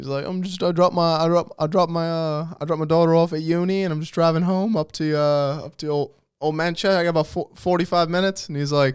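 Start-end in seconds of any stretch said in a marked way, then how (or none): 0.3-8.5 put-on British man voice, much slower. Retelling a video of a British man answering the cop who pulled him over: British accent. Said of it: "this like British dude getting pulled over".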